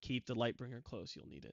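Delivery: hushed whisper. Narrating a vanishing character's parting words to Normek, whispering. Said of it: "as he whispers".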